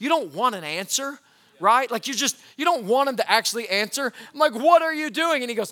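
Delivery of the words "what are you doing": put-on nervous voice, higher and louder. Retelling finding a child peeing on the porch: imitating a nervous parent question. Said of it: "a nervous response as a parent".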